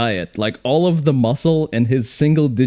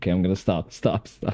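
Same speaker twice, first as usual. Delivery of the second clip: usual speaking voice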